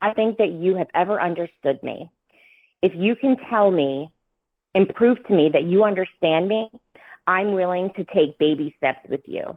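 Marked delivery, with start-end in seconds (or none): none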